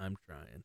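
very low, quiet, hushed mumble under the breath. Speaker retells a movie scene where a man faces a keep-clear sign: mumbling. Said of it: "and he just mumbles".

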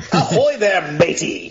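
booming, very loud, high pirate voice. Greeting the scene in character as the pirate: pirate voice. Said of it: "Jack Random the pirate".

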